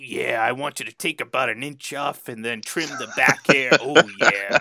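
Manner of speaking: very loud, high, huge shouted hype voice. Picturing everyday activities done in the voice of Randy Savage. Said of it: "done in the voice of like Randy Savage".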